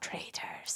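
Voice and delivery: whispered, with a Scottish accent and lilt. Naming a reality show, answering a question: Alan Cumming impression. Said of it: "Are you trying to do a, um, Alan Cumming impression?".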